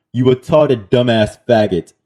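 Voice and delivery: ordinary talk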